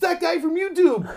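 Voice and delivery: very high, shrill, full-volume top-of-the-lungs yell. Retelling how one person at the show reacted: imitating someone yelling at full volume. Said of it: "yelled at the top of his lungs".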